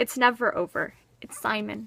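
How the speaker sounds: ordinary delivery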